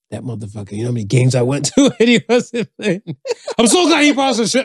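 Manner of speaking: put-on, high, loud, enraged, building tirade. Retelling how a man reacted when his team won, imitating an enraged rant. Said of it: "you can hear the rage in his voice".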